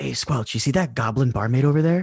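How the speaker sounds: hushed whispering aside. Playing Jerome, the speaker talks to Squelch, whispering. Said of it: "I'm gonna whisper to Squelch".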